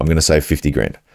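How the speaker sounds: plain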